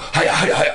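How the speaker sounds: high, loud, rattled-off herding call. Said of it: "real fast".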